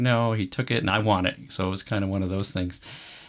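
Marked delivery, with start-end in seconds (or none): none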